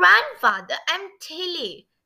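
high, protesting, objecting tone. Narrator reads Tilly correcting her grandfather, who called her Millie; protesting. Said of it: "she protested".

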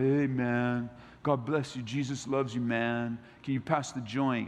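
put-on slow stoner voice. Acting out a casual stoner talking to someone, then stepping out of the voice to make a point. Slow stoner voice. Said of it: "change my voice back".

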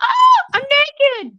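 very high, shrill yell like a woman. Imagining a shapeshifter caught mid-shift, imitating a woman yelling. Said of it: "yelling like a woman".

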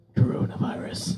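deep, frightening voice. Prompted by another speaker to say it, [name] answers in a deep, scary voice. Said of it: "you could do a really like deep, scary voice".

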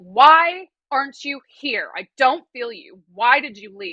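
put-on mad tearful voice. Retelling stomping through the hills with the dog: imitating angry crying. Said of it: "pissed, and I'm crying".

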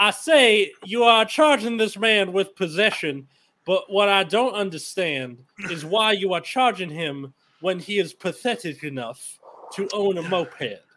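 vague, loose, rough-edged put-on Southern accent. Player as a lawyer addressing the judge in court, put-on Southern accent. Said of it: "I'm doing the Southern one".

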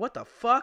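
high-pitched, loud, incredulous, disbelieving outburst.

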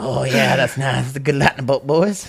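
mock crackhead-like talking. Retelling how he talked on the school bus: imitating himself like a crackhead. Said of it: "Like a like a goddamn crackhead back in the bus going".

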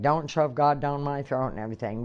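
angry, mad retorting tone. Retelling what an angry daughter said: imitating an angry daughter. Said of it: "my daughter's mad at me".

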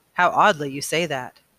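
ordinary delivery

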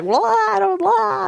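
mock drunken sobbing talk. Retelling answering a police officer while drunk: imitating drunk crying speech. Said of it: "drunk logic with tears".

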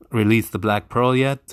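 ordinary talk, nothing marked

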